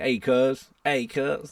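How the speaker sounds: slow Long Beach accent. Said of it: "but not like [name]".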